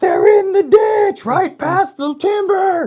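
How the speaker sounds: very loud, high, drawn-out yell. Retelling calling across a clear cut without a radio: retelling own yell. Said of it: "So I'm yelling".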